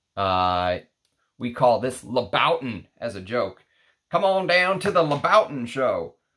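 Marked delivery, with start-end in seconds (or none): 4.1-6.1 quick, high, jokey put-on Texas accent. Speaker jokes about the louboutin name, texas accent. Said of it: "in my Texas accent".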